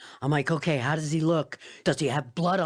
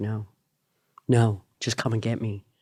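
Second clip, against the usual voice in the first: put-on tearful crying voice, lower; 6 semitones lower than usual. Retelling a son's crying phone call at four in the morning: imitating someone crying.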